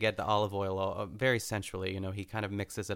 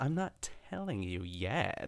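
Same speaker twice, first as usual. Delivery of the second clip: mock-playful teasing, much quieter; 4 dB quieter than usual. Retelling a cooking scene, the speaker quotes a woman's reply: retelling a playful tease. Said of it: "It's just so playful".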